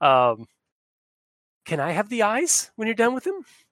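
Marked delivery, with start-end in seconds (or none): 1.7-3.4 tiny, small, high little creature voice. A game narrator voices a small creature behind Fook, small little voice. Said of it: "Says a little voice".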